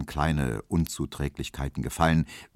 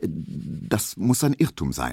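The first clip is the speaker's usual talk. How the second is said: stammering, stuttering, slower. Emil Kubinke answers Herr Zidorn's reproach, stammering. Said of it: "stotterte Emil Kubinke".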